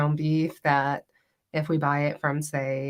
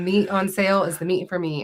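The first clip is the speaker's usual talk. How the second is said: plain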